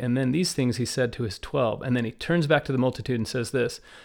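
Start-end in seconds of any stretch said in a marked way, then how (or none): none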